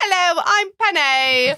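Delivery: very high-pitched fake British accent. Retelling saying a line at home in the Penny voice: put-on British accent. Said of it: "just saying".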